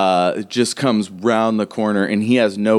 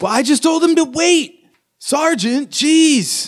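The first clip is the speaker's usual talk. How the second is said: put-on very high twelve-year-old kid voice. Voicing a twelve-year-old answering the sergeant: voicing a twelve-year-old. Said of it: "the twelve-year-old is like".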